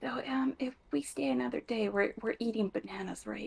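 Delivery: soft hushed whisper. Asking the others quietly about staying another day: whispering. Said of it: "I'm just gonna whisper".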